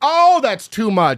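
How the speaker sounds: loud, blurted, drawn-out exclamation. Retelling own reaction blurted out in the theater, imitating saying it really loudly. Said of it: "really loudly".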